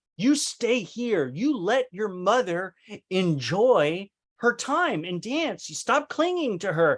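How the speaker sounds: put-on stern, angry scolding with enjoy leaned on and drawn out. Retelling what she said while holding him, retelling own angry scolding. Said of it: "I remember holding him like angry".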